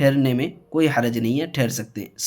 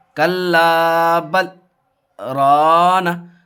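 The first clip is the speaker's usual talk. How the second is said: short raised hold after bal, no breath; 3 semitones higher, 4 dB louder than usual. Reading lesson on a stop after bal: brief stop after bal, no breath. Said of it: "तो थोड़ी देर आवाज़ रोक रहे हैं, उसके बाद आगे पढ़ रहे हैं, सांस नहीं तोड़ रहे हैं।".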